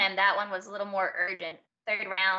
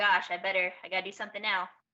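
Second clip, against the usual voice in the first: ordinary talk, nothing marked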